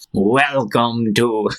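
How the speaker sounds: eerie, spooky, creepy announcer voice. Retelling a dressed-up man with a microphone greeting visitors, creepy voice. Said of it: "like with a creepy voice".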